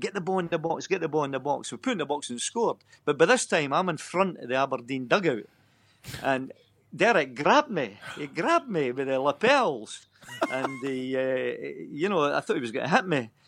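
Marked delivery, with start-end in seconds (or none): 0.0-1.7 insistent shout, called out twice. Retelling shouting from the dugout at a late free kick: retelling own shout. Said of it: "I was shouting".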